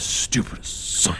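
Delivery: whispered, hushed muttering under breath. Voicing a character who must take someone up there, muttering under his breath. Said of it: "he mutters under his breath".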